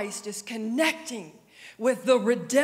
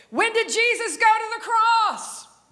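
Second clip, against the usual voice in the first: mock piercing, very high-pitched, loud shout; 10 semitones higher, 5 dB louder than usual. Retelling what the speaker shouted at Grandma, retelling a yell. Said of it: "But I'm yelling at her".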